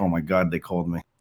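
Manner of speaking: ordinary delivery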